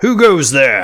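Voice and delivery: shouting. Voicing a guard who steps out of hiding: shouting down below. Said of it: "shouts down below".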